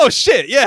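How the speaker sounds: high, loud, startled realization. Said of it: "I was like".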